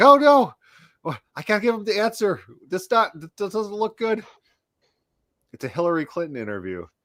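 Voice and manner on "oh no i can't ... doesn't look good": mock alarmed, high, raised, panicking voice. Retelling how another person reacted when asked for the answers, mock-panicking. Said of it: "Eric's like panicking".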